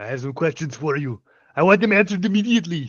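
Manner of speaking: put-on Austrian accent, action-hero voice. Voicing a rogue character questioning someone, in an Austrian action-hero accent. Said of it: "What if we all talk like this".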